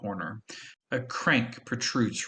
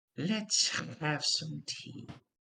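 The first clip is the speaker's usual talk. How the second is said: put-on dry crunching-leaves old woman's voice, soft and high; 5 semitones higher, 5 dB quieter than usual. Narrating a scene, voicing the little old woman who invites the children in, crunching-leaves voice. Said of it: "She says in a voice reminiscent of crunching leaves".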